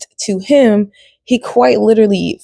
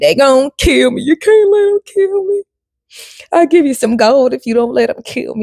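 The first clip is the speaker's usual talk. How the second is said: put-on, frantic, desperate begging with swooping pitch; 4 semitones higher than usual. Retelling a game character's plea for protection: imitating someone begging. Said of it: "He's basically begging".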